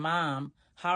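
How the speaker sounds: plain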